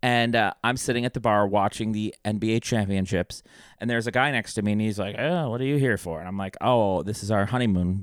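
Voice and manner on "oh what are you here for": put-on old-timey elderly man voice. Retelling a stranger at a bar asking why he's there, old-timey guy voice. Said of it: "Old timey guy".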